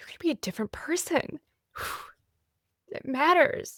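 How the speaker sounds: moved, voice full of feeling. Speaker urging listeners about how they talk to themselves, getting emotional. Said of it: "I'm getting emotional".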